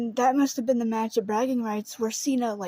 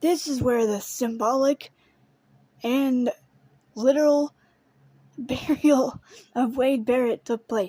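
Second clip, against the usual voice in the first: words breaking into laughter while talking. Recapping a wrestling storyline, laughing while talking. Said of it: "I'm laughing because it's freaking absurd".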